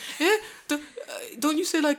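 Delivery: put-on high childlike voice.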